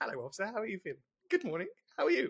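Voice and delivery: high, fast, overly polite mock-polite tone.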